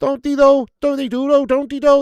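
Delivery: loud, high-pitched Scouse accent. Talking about how Scousers sound, repeating a question in a Scouse accent. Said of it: "fancies this Scouse accent".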